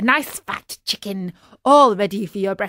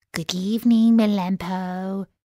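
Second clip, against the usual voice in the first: sugary, sweet, honeyed voice. Calling good evening at the door of the doghouse, in a sweet voice. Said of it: "said in a sweet voice".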